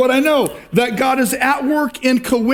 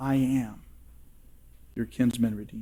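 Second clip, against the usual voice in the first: whispered, very quiet, barely audible; 12 semitones lower, 13 dB quieter than usual. Preaching, voicing God speaking to the listeners: whispering. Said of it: "God is whispering to you".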